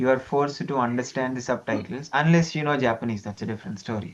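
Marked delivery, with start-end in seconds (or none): none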